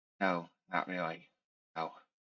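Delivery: secretive, low, hushed half-whisper. After checking the room for eavesdroppers, a character answers the player: half-whispering. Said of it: "she whispers to you".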